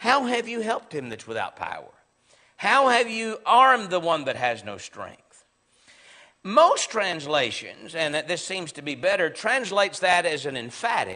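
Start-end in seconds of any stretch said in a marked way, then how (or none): 0.0-5.2 sincere, genuine, earnest tone. Reading Job's line as a sincere question: Job asking a real question. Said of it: "he would be asking this question".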